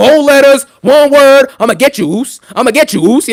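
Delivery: taunting, wrestler's ring promo-style delivery. Answering a viewer who asked for a Jey Uso impression. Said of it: "Do a Jey Uso impression".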